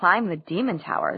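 ordinary delivery

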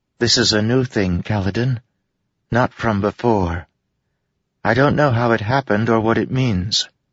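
gentle, tender, high-pitched. Syl answers Kaladin about the storms, speaking softly. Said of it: "Syl said softly".

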